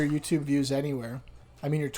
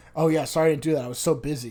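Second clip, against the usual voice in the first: put-on earnest, genuine-sounding tone. Complaining about an unhelpful coworker, acting out his reply as a mimicked sincere excuse. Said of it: "like he thinks it's a legitimate excuse".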